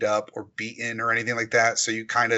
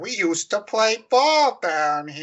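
terrible fake Boston accent, high, very slow, drawn out; 10 semitones higher, 4 dB louder than usual. Quoting a man talking to the kid, bad Boston accent. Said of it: "one of the terrible boston accents".

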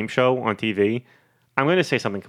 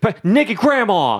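play-acted, very high, loud, thrilled, enthused exclamation; 9 semitones higher, 6 dB louder than usual. Retelling a guy's answer in a game round: imitating an enthused fast answer. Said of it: "he was so enthused about it".

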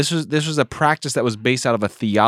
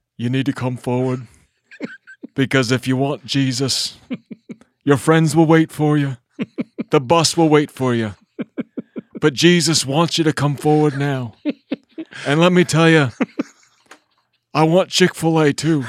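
pleading revival preacher voice, evangelist style; 4 semitones higher than usual. Imitating the end of a revival service altar call: Billy Graham impression. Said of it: "[name] does a wicked Billy Graham impression".

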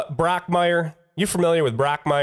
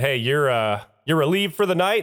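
plain

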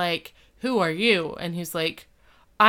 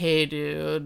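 put-on cocky cool-guy voice, lower; 4 semitones lower than usual. Retelling a scene, mocking Mister Turner: mocking Mister Turner impression. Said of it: "He's like".

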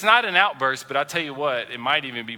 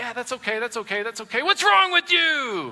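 mock passive-aggressive tone; 9 semitones higher than usual. Acting out an example of anger that isn't an outburst: mock passive-aggressive tone. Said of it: "that passive aggressiveness".

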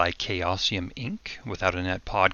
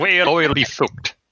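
put-on Irish accent, higher and louder; 7 semitones higher, 7 dB louder than usual. Redoing a line in the irish accent someone forgot: mock irish accent. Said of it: "You are Irish".

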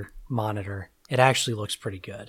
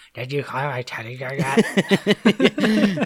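slow, loud, very drawn out through the teeth; 4 semitones higher, 6 dB louder than usual. Imitating a character's line: talking with the teeth. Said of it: "All talking with your teeth".

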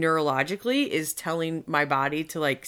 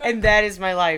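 ordinary talk, nothing marked

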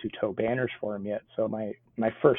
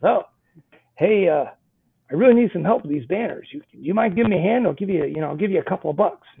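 put-on crotchety old man voice, raised and high; 8 semitones higher, 7 dB louder than usual. Retelling how a man at the airport first spoke: crotchety old character voice. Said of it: "I'll do a crotchety old character".

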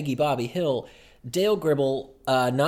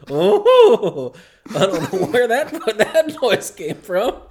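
caught-off-guard, puzzled outburst, high, loud and swooping; 8 semitones higher, 8 dB louder than usual. Joking about a voice glitch, quoting a Hank Hill moment: Hank Hill voice. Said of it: "one of those Hank Hill moments of".

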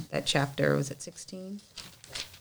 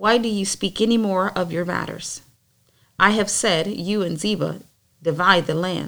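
plain

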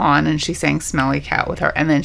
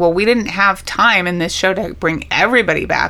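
normal talking voice

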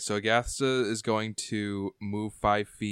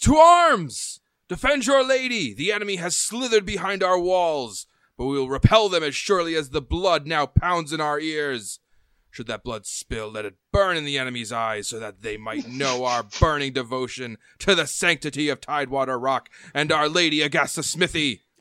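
battle cry shout, higher and louder; 6 semitones higher, 5 dB louder than usual. Voicing a commander who rallies the guards against intruders: shouting a battle cry. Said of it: "He shouts".

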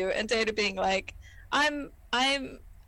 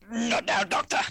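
put-on grunted delivery. Retelling how Picard answered the doctor: imitating a grunted line. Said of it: "gruntedly goes".

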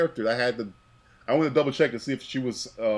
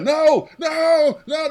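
put-on screaming robot voice, much higher, louder, slower; 10 dB louder than usual. Describing Daleks losing it, the speaker acts one out: screaming Dalek impression. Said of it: "They start screaming".

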